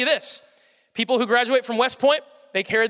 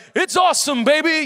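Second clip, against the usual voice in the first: pitched-up impassioned sportscaster voice; 5 semitones higher, 4 dB louder than usual. Imitating a famous sportscaster's cadence and passion: Dick Vitale impression. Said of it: "He's famous for his cadence and his passion".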